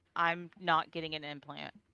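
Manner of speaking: put-on defiant angry teenager voice. Describing what one hears, the speaker acts it out in a mock-defiant angry teenager voice. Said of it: "very defiant, like angry teenager voice".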